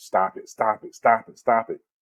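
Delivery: ordinary talk, nothing marked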